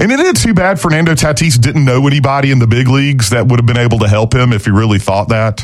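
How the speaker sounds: ordinary talk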